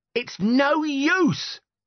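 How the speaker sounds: furious screamed outburst, shrill and very high. Narrating, a girl told to go to her lesson answers her mother: screamed. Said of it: "screamed Susan".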